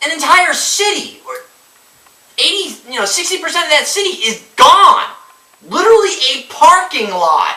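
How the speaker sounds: worked-up, eager, loud, high-pitched excited exclaiming. Ranting about a city destroyed in a movie: loud and excited. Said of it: "I'm getting really loud, really excited".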